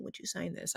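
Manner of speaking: soft, shy, whispered voice.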